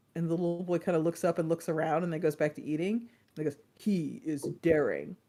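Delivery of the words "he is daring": epic, low, dramatic movie-trailer voiceover. Retelling how a voice announced things over a little boy eating, movie trailer announcer voice. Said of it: "this very uh movie trailer announcer voice says".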